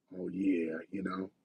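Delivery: put-on sultry voice. Proposing a UFO topic for next time to the group, in a seductive voice. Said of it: "do my seductive voice".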